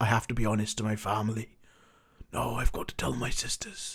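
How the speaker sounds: put-on Welsh-sounding accent. Retelling a TV character's lines: bad Jon Snow accent. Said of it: "That's not quite the right accent".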